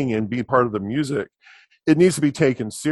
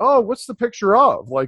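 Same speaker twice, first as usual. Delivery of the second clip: put-on very high, sweet, innocent little-kid voice; 10 semitones higher, 4 dB louder than usual. Speaker retells a childhood question to a Sunday school teacher, acting out innocent asking. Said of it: "I just very innocently said".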